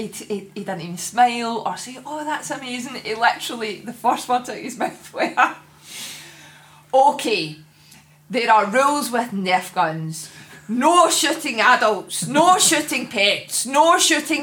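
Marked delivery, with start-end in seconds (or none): none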